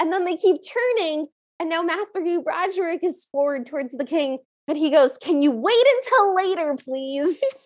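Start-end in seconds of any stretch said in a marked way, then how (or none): 5.2-7.4 huffy, put-out, irritated, annoyed tone. Retelling the prince brushing off the king: imitating a huffy reply. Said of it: "No need to get huffy".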